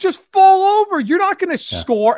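very high-pitched, loud screaming. Retelling screaming at a player during the game: retelling a scream. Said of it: "we're just screaming at him".

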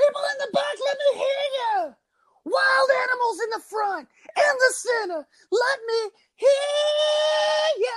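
high-pitched shout with the word "hear" stretched out. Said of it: "the voice of [name]".

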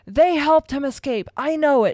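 loud, high, out-of-control howling outburst. Pointing at Harry and Hermione, Snape answers Fudge howling. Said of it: "Snape howled".

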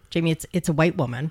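ordinary talk

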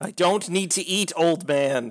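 sudden, high-pitched, shouty outburst. Replying to the old man who asked a question, shouting. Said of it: "Why are you shouting?".

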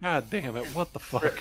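put-on muttered swearing, odd accent. Speaking in character in the Kasatha tongue, swearing under breath in a weird accent. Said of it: "swearing under my breath in Kasatha".

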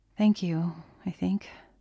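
low, quiet, soft voice. Andy replies to Mrs. Belikov's compliment: quietly. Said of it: "Andy said quietly".

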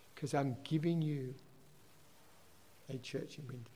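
soft, breathy, hushed whisper. Retelling what was heard in answer to a question: retelling a whisper. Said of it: "God just whispered".

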